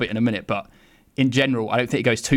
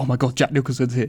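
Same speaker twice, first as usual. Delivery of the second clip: put-on, very excited gushing voice. Retelling how she reacts at the Oscars on seeing Jack Nicholson: imitating someone so excited. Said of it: "and she's so excited".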